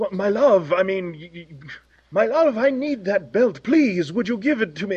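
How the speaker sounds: put-on pleading French lover voice, French accent. Quoting a game character who asks for a belt: Pepe Le Pew French voice. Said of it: "this French, you know, Pepe Le Pew".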